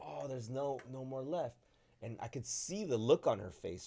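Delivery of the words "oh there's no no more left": put-on panicked outburst in a girl's voice. Retelling a girl finding the toilet paper aisle empty: imitating a panicked girl. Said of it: "panickingly goes into the toilet paper aisle".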